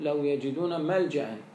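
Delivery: ordinary talk, nothing marked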